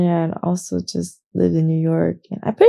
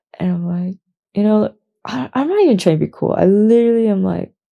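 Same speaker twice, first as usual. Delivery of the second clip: ordinary talk, nothing marked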